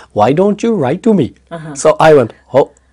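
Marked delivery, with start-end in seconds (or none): 0.1-1.3 full, laid-on put-on Indian accent, pitched up. Recalling a voice heard in their head, the speaker quotes it in an Indian accent. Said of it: "with the whole Indian".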